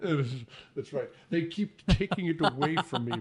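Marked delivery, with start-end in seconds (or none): 1.3-3.2 impression, movie-star Scottish voice. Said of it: "That sounded a lot like Sean Connery".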